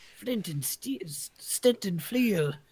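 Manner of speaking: put-on, elf-like character voice.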